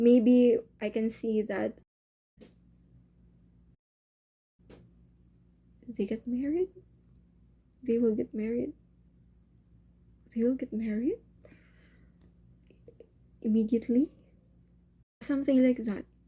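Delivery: in a whisper. Speaker voicing a bold assumption aloud, whispering. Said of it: "I'm just whispering".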